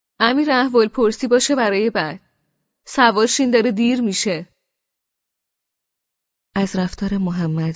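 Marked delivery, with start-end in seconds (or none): 0.2-4.5 loud, high-pitched, carrying voice. Mohammad pushes the narrator into the car, ignoring Khosrow, in a loud voice. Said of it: "با صدای بلند".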